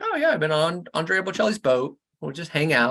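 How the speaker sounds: ordinary talk, nothing marked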